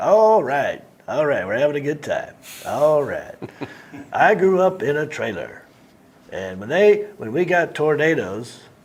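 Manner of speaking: delivered like a stand-up set. Imitating a friend who has a new Netflix special: Dusty Slay impression. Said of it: "He talks like this. He goes".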